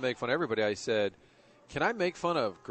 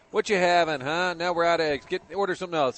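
put-on sassy rude voice, higher and louder; 5 semitones higher, 7 dB louder than usual. Retelling how the fifties diner waiters talk: imitating a sassy rude waiter. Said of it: "kind of this sassy fifties downer".

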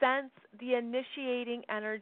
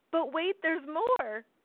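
pitched-up, hard-selling TV infomercial announcer voice; 5 semitones higher than usual. Talking to listeners, the speaker briefly puts on an infomercial announcer voice. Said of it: "I'm trying to sound like an infomercial".

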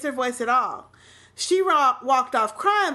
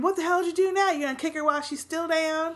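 rushed, mild, berating yell, kept light; 3 semitones higher than usual. Recounting a man going off at someone during a fight: imitating him yelling. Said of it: "he goes off yelling and saying".

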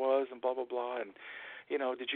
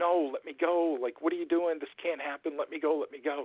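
mock frightened, desperate, terrified screaming; 3 semitones higher than usual. Narrating a story, acting out a terrified man's cries, imitating terrified screaming. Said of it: "he's terrified, and he starts screaming".

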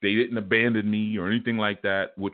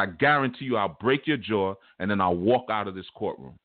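ordinary talk

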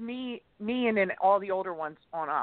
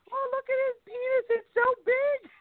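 very high, shrieking, screeching grandmother voice. Retelling grandmother reacting to a movie: imitating grandmother screaming in Italian. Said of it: "my grandmother in Italian screaming".

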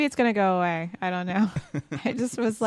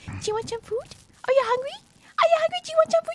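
put-on high, quick baby-talk voice. Speaker shows how they talk to their cat all day, baby talk to a pet. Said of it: "the baby talk is all day long".

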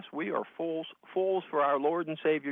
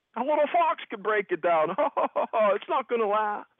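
put-on jeering voice, much higher and louder; 7 semitones higher, 6 dB louder than usual. Acting out how Tobiah mocked the work of Nehemiah and his people, imitating Tobiah mocking. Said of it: "mocking the work of Nehemiah and his people".

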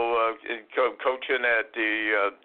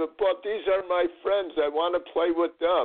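put-on tearful crying voice, higher; 7 semitones higher than usual. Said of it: "actually crying on my shoulder saying".

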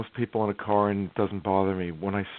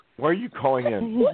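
playful fake yelling, higher pitch; 5 semitones higher than usual. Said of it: "I have to yell at somebody here".

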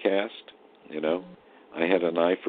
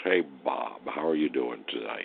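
deep, resonant golden-age Hollywood voice; 5 semitones lower, 4 dB quieter than usual. Retelling how an actor friend greeted him: imitating a deep resonant voice. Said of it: "had this great, deep, resonant voice".

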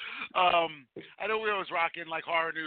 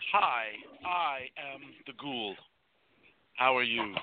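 put-on slow, overly polite, eloquent proper speech; 4 semitones lower than usual. Greeting the others after being teased about a flat entrance: mock eloquent and polite. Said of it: "Shall I speak more eloquently and politely?".

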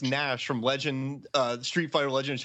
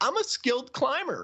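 put-on very high, whining, drunken Swedish accent; 14 semitones higher than usual. Recounting a character kicking away waves of zombies, in a whiny drunk Swedish voice. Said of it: "why does he sound like that?".

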